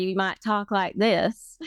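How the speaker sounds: put-on rural country Southern accent. Speaker demonstrating how people in the rural South talk, rural Southern accent. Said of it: "in the South in the country".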